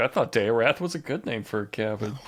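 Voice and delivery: sad, let-down, soft, dejected voice. Joking about a cut to Buck after a witness: imitating Buck sounding sad. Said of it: "Buck all sad".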